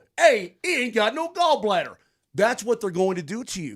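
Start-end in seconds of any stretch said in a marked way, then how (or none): 0.2-2.0 put-on Buffalo-sounding accent. Acting out what they'd say at a medical school, in a put-on Buffalo accent. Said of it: "that was a Buffalo accent".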